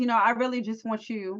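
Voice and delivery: ordinary talk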